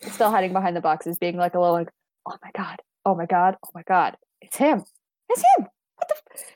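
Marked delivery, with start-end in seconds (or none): 2.3-6.4 private mutter, muttering to herself. A player voices their character hiding behind boxes, quiet muttering to herself. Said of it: "very quietly, like, muttering to herself".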